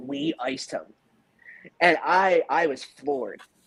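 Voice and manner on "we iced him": gravelly, raspy, ghostly whispered voice. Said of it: "Just like that".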